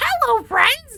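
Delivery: put-on croaking toad voice. Joking that every kid has to talk this way: put-on toad voice. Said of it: "has to speak like a toad".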